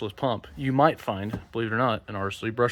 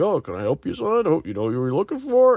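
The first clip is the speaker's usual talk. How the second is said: put-on eager, sing-song elderly man voice, pitched up; 5 semitones higher, 5 dB louder than usual. Speaker mimics the older gentleman helping in a hardware store aisle, imitating an elderly man. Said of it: "talk to the older gentleman who's like".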